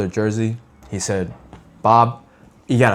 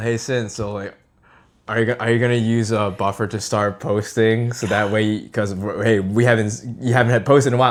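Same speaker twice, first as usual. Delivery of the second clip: normal talking voice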